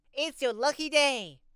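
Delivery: put-on high-pitched child toy voice. In a gas station store, the toy Lucky Boy speaks up, soprano-toned child's voice. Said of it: "in his soprano-toned child's voice".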